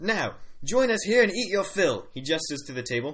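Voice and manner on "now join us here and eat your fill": put-on loud, pitched-up Australian-accented character voice. A character abruptly changes the subject; australian accent. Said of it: "He has an Australian accent".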